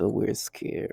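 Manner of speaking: mock breathy, frightened-sounding whisper. Retelling what they say in their tone: imitating them sounding scared. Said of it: "they use their tone of voice".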